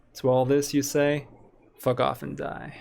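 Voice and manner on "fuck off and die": cool, unbothered tone. Responding to doubters who call the idea insane, in a cool voice. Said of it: "in a cool voice".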